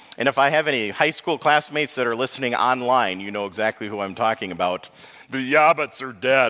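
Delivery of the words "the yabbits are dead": kind of froggy cartoon puppet voice. Show listening high school classmates exactly how he sounded, in a kind of Kermit the Frog voice. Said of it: "kind of Kermit the Frog".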